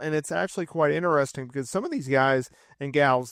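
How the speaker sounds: plain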